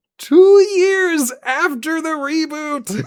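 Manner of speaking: TWO stressed, repeated, very high, loud, drawn out.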